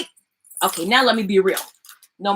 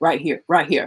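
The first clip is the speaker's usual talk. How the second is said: very low, small, deep voice; 7 semitones lower than usual. Retelling a man pointing at the mic, imitating his little deep voice. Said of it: "right here in his little deep voice".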